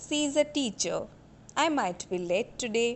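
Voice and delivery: pitch falls at the end of teacher and today. Demonstrating example sentences for the audience: falling tone. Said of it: "you can see that my tone is falling".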